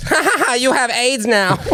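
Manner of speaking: very high, comic character voice. Retelling a funny moment, in the Mister Chow voice. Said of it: "in the Mister Chow voice".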